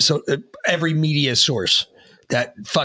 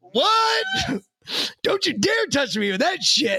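put-on very high-pitched elderly man's voice. Retelling how an old man reacted to a reporter: imitating the old man. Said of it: "and the old man's like".

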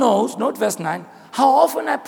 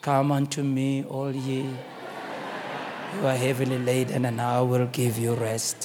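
very low, hushed, flat monotone; 12 semitones lower, 9 dB quieter than usual. Acting out for listeners the neutral figure shown in pictures, in a monotone Jesus Christ voice. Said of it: "he speaks in a monotone voice".

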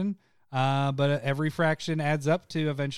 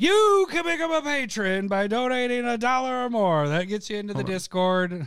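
raised, pitched-up, booming wizard voice; 7 semitones higher, 4 dB louder than usual. Reading out the podcast's patron details, going for a Gandalf-like voice. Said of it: "it sounded like you were going for Gandalf".

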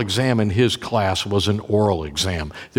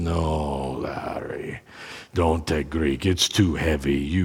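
terrible fake German accent, lower, quieter, slower; 5 semitones lower, 5 dB quieter than usual. Quoting the man who helped him choose classes, in a terrible german accent. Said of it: "My German accent's probably terrible".

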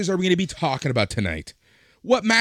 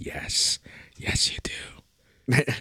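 creepy, hushed whispered voice; 4 semitones lower, 6 dB quieter than usual. Recounting their reply to her realization, speaker repeats it: retelling in a creepy voice. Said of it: "I said it in that voice, too".

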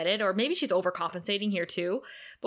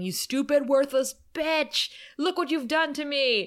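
put-on mild raging, shouting outburst; 5 semitones higher than usual.

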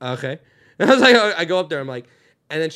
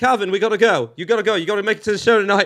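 bad, awful put-on British accent; 4 semitones higher, 3 dB louder than usual. Retelling guiding a lookalike through a crowd, awful british accent. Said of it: "with my awful British accent".

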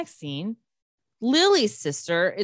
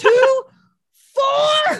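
put-on furious outburst, higher and louder; 8 dB louder than usual. Retelling a man flipping out about developers: imitating someone flipping out. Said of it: "flipping out".

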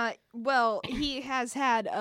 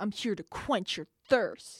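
put-on aggressive delivery, lower; 3 semitones lower than usual. Describing a character who smashes through walls, acting out a very aggressive slogan. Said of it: "But very aggressively".

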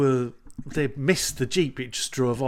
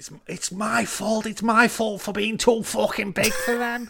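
mouthing off at a higher pitch; 8 semitones higher than usual. Retelling what a boxer said about himself: imitating Tony Bellew. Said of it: "Tony Bellew was like".

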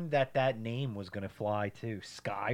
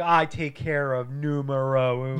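plain

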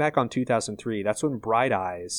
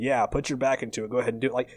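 fast, sarcastic heckling tone. Recapping an episode, quoting Seth in the background during the tree scene: imitating Seth being sarcastic. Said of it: "just like sarcastically standing in the background going".

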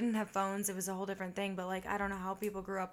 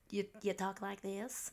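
bad mock valley girl voice, quieter; 3 dB quieter than usual. Mocking how some people talk, in a terrible valley girl voice. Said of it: "you talk like a fucking valley girl".

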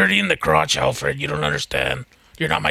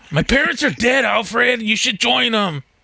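put-on sulky emo kid voice, pitched up; 9 semitones higher than usual. Speaker jokes about an emo version of a hero, acting out his lines to his butler: emo teen voice. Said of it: "like an emo kid Batman".

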